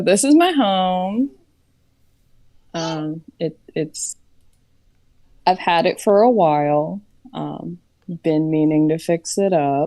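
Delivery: thick, heavy, laid-on sarcastic delivery. Voicing a character showing her home to visitors: very sarcastic in character. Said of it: "she says very sarcastically".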